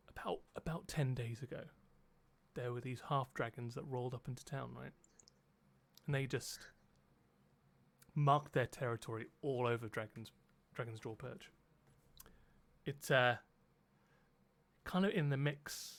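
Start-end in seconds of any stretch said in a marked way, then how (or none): 0.2-11.5 hushed, low, leaning-in confiding voice. Game master playing a character who steps closer so the players can hear, in a lowered voice. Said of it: "he kind of lowers his voice".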